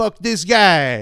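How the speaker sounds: high put-on Italian accent, words stretched long. Podcast co-host echoing a rant about some guy, in an Italian accent. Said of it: "We always end up talking in an Italian accent".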